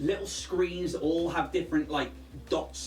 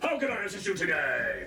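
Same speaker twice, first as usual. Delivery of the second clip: big, grand, larger-than-life voice; 2 semitones higher than usual. Going over a character sheet, speaker performs the voice that greets them, booming voice. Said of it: "And it is this booming voice".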